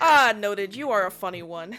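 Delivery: quiet chuckle while talking. Voicing a village elder amused by a player's joke: chuckling under his breath. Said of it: "chuckles under his breath, and he goes".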